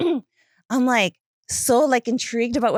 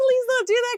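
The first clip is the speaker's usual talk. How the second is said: play-acted, very high-pitched, tearful crying plea; 13 semitones higher than usual. Retelling a reply to a proud therapist: imitating own crying. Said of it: "'cause I'm, like, crying".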